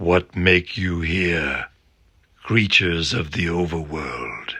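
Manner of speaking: dark, flat, low voice. Reading aloud, narrator voices a stranger's question in a dark, flat voice.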